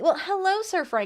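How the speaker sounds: put-on Southern US accent. Speaker greets sir frank in a southern accent. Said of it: "I'm currently in a southern accent".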